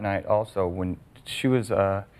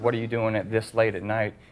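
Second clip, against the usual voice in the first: normal talking voice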